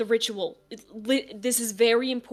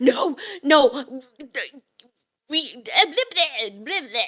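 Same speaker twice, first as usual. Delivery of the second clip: slow, panicked rat voice, stumbling over words; 3 semitones higher, 3 dB louder than usual. Voicing a rat that speaks Latin: freaking out rat voice. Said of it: "that was it freaking out and also speaking Latin".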